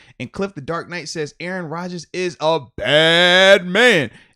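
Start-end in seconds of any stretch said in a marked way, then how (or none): 1.4-4.1 very loud, slow, booming delivery, "bad" stretched out. Reading a chat comment aloud: Stephen A. Smith voice. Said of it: "In the Stephen A Smith voice as well".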